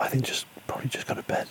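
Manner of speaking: soft, unvoiced whisper.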